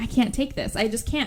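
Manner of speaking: ordinary delivery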